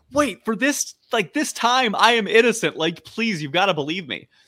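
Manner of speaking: mock earnest tone. Retelling Grunkle Stan's plea to the kids in the car: imitating earnest pleading. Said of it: "say really earnestly in the car to the kids".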